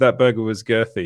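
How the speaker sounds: ordinary talk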